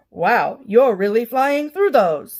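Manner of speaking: loud, slow automated female voice. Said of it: "it's a automated female voice".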